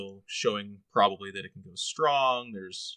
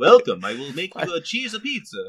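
put-on Italian vampire voice, higher and louder; 7 semitones higher, 7 dB louder than usual. Voicing a joke character for a player's name: Italian pizza maker vampire voice. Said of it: "he's the Italian pizza maker vampire".

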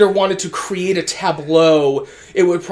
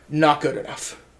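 imitated, mock-deadpan delivery, quieter; 4 semitones lower, 7 dB quieter than usual. Quoting someone from the past who became a voice of insecurity, imitating deadpan. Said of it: "But just a deadpan".

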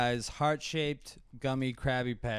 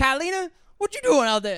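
very high, very loud put-on calling-out voice; 13 semitones higher, 9 dB louder than usual.

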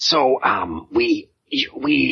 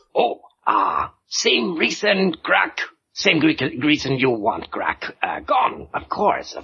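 sly, scheming goblin voice, much higher; 6 semitones higher than usual. Goblin emissary urging the dwarves to help him topple the warlord: scheming goblin voice. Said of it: "See, goblins of west, goblins back west, they under the thumb of [name] Blood of Moon, warlord. Yes? He very angry and big and horrible and hateful, and he kill all dwarfy retinue. But he not good kin".

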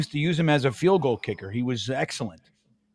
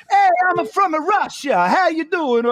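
put-on fake Italian-American voice, higher and slower; 13 semitones higher, 7 dB louder than usual. Clowning about being limited at accents, greeting someone by falling into the same accent again. Italian-American accent. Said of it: "I go right into Paisan".

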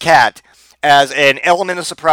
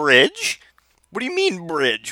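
put-on cat voice, quieter; 6 dB quieter than usual. Imagining a cat answering its old hobo cat buddies, in an imagined cat voice. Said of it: "that is the voice I imagine this cat to say".

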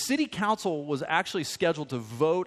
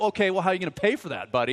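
mock prickly, defensive and challenging tone; 3 semitones higher than usual. Retelling his reaction when Josh says he's moving out too: acting out getting defensive. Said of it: "i got all like defensive".

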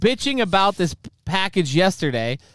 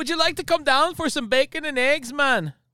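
bad Jamaican accent, pitched up; 9 semitones higher, 3 dB quieter than usual. After praising Irish accents, a speaker tries one for friends, bad accent, sounding Jamaican. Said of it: "That was Jamaican".

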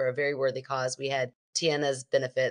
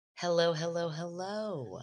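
sultry radio DJ voice, higher and quieter; 5 semitones higher, 4 dB quieter than usual. Greeting everybody at the start of the episode: sultry late night radio voice. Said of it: "You kinda have your sultry, like, late night radio talk".

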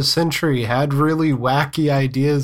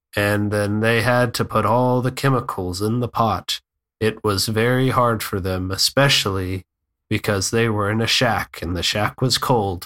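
very bored, low, droning documentary narrator voice; 5 semitones lower than usual. Mocking a narrator describing what people are doing: imitating a bored narrator. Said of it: "a narrator in a very bored voice goes".

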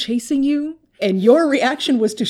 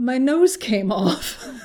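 ordinary delivery

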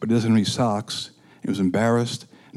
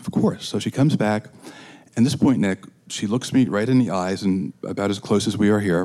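usual speaking voice

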